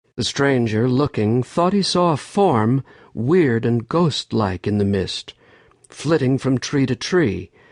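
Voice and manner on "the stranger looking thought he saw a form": plain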